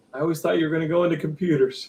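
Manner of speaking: disappointed tone with a sigh. Retelling an uncle's reaction to early radio shows: imitating Uncle Doug's disappointment. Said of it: "The disappointment in the voice".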